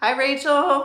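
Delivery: cracking voice. Greeting someone in a live chat: voice cracking. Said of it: "my voice just, like, totally cracked".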